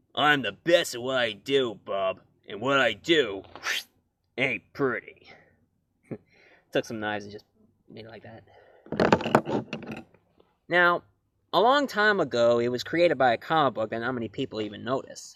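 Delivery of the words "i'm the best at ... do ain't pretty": gruff, growling hero voice. Wearing an X-Men shirt, the speaker introduces his topic: Wolverine impression. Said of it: "I like to do my impression of uh, Wolverine".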